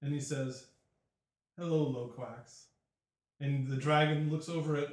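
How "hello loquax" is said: long exasperated sigh, weary and fed-up. Voicing a character who sighs long before greeting the dragon: exasperated sigh greeting. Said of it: "you just hear him sigh, a long, exasperated sigh".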